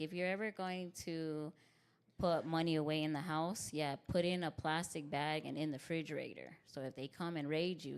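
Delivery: ordinary talk, nothing marked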